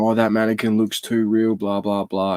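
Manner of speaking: ordinary talk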